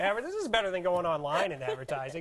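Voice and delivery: ordinary talk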